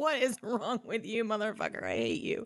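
sobbing through the words, tearful outburst. Retelling a story, acting out a character's outburst: imitating Sam crying. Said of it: "he's crying now".

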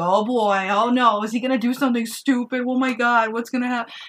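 loud, totally absorbed, engrossed reaction. Retelling how Scott reacted while watching the movie: imitating Scott getting into it. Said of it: "You were into it at this point".

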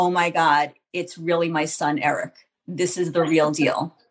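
usual speaking voice

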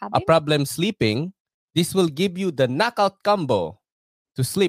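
loud put-on Filipino accent throughout. Pitching a CBD sleep product, in a Filipino accent. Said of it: "That's my Filipino accent there".

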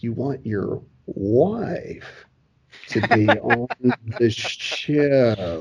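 slow, low, deliberate, drawn-out, halting, broken-up delivery. Recounting what the creative team at the Blaze said, retelling their slow delivery. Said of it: "And they said it slow, just like that".

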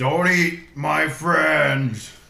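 huge, high, booming, furious raging scream. Narrating a game, the speaker voices a character charging in rage: raging scream. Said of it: "he rages in a huge scream and he says".

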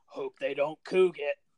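put-on rough, gravelly older man's voice. Retelling what an older guy said while grabbing their arm, imitating a gravelly voice. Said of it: "in his gravelly voice goes".

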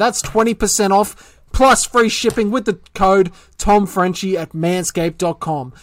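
code words repeated with stress.

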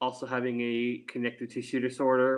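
very fast, rushed delivery. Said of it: "you said it very fast".

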